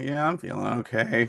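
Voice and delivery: animated donkey character voice. Repeating another speaker's reply: imitating an Eeyore answer. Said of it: "that was the best Eeyore answer".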